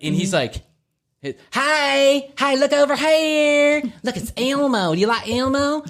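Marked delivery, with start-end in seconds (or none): 1.5-5.8 put-on very high, slow, effeminate elf voice. Describing an elf standing behind a woman; imitating his effeminate voice. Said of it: "Who's a little effeminate".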